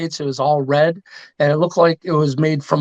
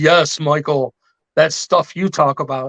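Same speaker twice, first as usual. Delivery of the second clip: put-on older-sounding voice. Retelling what the chief said when asked about the artifact: imitating the chief. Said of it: "that's my chief impersonation".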